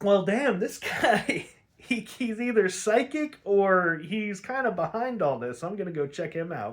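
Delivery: surprised, realizing tone. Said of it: "So Robin's like".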